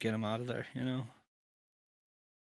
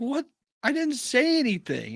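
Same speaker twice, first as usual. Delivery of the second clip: very high-pitched, slow, baffled protesting tone. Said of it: "And Boone's like".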